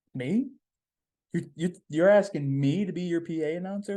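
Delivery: mock stunned, stammering, shocked disbelief. Retelling being asked to be PA announcer: retelling own shocked reaction. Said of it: "with the most shocked face".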